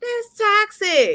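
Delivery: high, slow, drawn-out, heavily emphatic voice. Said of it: "I'm like".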